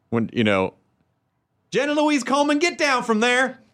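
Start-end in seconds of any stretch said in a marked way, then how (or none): 1.7-3.5 very high-pitched, put-on Southern accent. Telling the other speaker her name sounds Southern, the speaker imitates a Southern mom. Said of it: "I can picture a Southern mom".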